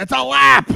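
very high, shrill, loud put-on character voice. Answering a quiz question as Admiral Ackbar: Admiral Ackbar impression. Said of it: "you have to do your best, Admiral Ackbar".

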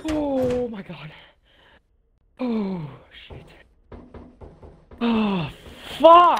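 very slow, drawn-out, frightened, panicked delivery. Playing a game, the speaker goes in despite a monster, panicked, heart racing. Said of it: "my heartbeat is fast".

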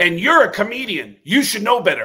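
high, loud parting yell. Acting out a man reopening the door on his way out, retelling a yell. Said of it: "he just keeps yelling".

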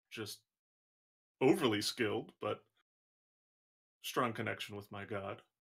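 put-on low older orc woman's voice. A game master voices an older orcish cleric woman in a tabletop game: older orc woman voice. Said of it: "Now you see an older orcish woman. She's probably like 45, 50. Has a lot of has some cleric vestments on".

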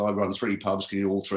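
ordinary talk

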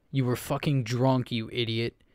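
curt, sharp snap. A man snaps back at the apologizing narrator: snapped back. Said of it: "he snapped back at me".

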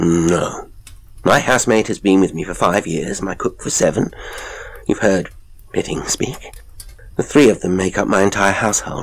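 plain reading voice

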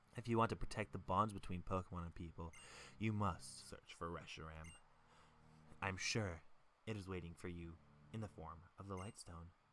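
very quiet, soft voice. Acting out a Pokemon scene, playing N, in a super quiet N voice. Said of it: "My voice is super quiet when I do N's voice".

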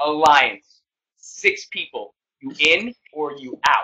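slow, deliberate, pressing, demanding tone. Retelling how a housemate demanded an alliance: imitating Devin's demand. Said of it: "I'm gonna do my best impression of how the Bomb Squad was created".

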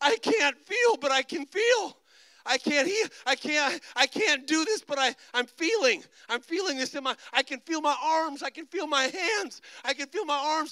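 high, uncontrollable mock sobbing through the words. Retelling a woman's words after he prayed for her, imitating her sobbing. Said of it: "Sobbing uncontrollably".

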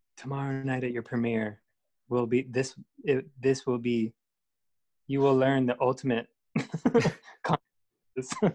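put-on whisper. Retelling what someone whispered in one's ear: imitating a whisper. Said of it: "whispers in my ear".

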